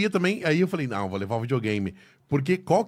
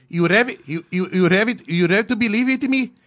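put-on loud Indian-accented English, repeated words; 5 semitones higher, 5 dB louder than usual. Imitating an indian speaking english: indian accent in english. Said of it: "o sotaque do indiano, cara. Nossa, o indiano falando inglês".

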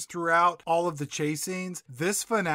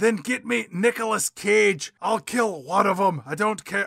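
put-on Scottish accent; 2 semitones higher, 3 dB louder than usual. Recounting a scene, quoting the carpenter's line, imitating a Scottish accent. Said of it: "why he has a Scottish accent".

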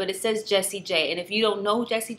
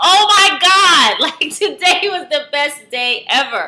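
very loud, thrilled, overjoyed outburst with pitch raised high; 6 semitones higher, 11 dB louder than usual. Podcast co-host opening the show at 1:26 a.m., very excited. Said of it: "I am so excited".

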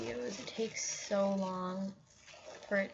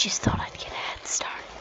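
demonic-sounding gurgling distorted voice, louder. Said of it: "So sorry if that sounded demonic".

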